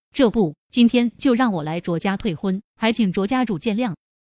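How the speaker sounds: ordinary delivery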